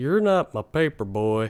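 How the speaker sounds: put-on voice of an old dude. Speaker retells an old man's story about a paper route: old man voice. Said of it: "the old dude who kind of like sounds".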